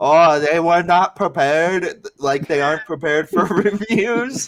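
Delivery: put-on heavy German accent, laid on thick. Retelling what a man said on the microphone after a fight: thick german accent. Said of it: "with a thick German accent".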